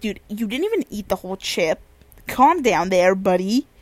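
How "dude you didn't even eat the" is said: plain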